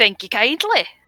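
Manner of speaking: put-on Scottish-accented speech. Thanking another player for a compliment: old Scotsman accent. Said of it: "You can do a mean Scottish accent".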